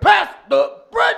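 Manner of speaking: very high, very loud, raw, rough screaming. Pitching a sketch of two families at dinner: imitating a screaming family. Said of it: "just screaming at each other during dinner".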